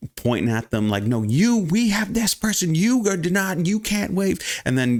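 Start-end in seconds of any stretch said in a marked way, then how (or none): 1.0-4.4 put-on, very high, pushy, shrill yelling. Retelling a woman at a counter scolding people who wave: imitating a woman yelling. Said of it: "started yelling at the people".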